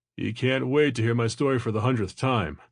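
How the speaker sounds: ordinary delivery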